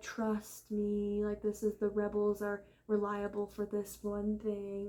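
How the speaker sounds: unhurried, deliberate, slow, drawn-out speech. Complaining about the on-screen version, imitating his slow speech: slow-talking Thrawn impression. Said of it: "He talks slow like that".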